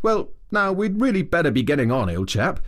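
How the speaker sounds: casual, careless, offhand delivery, lifted pitch. Rat rises after Mole's sobbing eases and remarks to him: careless remark. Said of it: "remarking carelessly".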